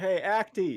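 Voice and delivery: loud, high yell. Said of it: "He's like".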